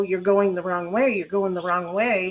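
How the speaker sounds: ordinary talk, nothing marked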